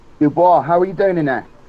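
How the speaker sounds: shouting out. Yelling in character to a companion named dubois inside: yelling in character. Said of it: "And I yell out to Dubois".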